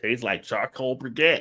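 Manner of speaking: put-on Southern US accent, Georgia style. Retelling what Brian said after tasting a drink: imitating Brian's southern accent. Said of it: "he's from Georgia, so he got that southern accent".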